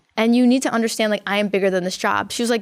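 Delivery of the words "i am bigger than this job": normal talking voice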